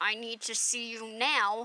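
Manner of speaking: put-on gritted-teeth speaking. Recounting what she said after graduation, imitating speaking through gritted teeth. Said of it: "through gritted teeth".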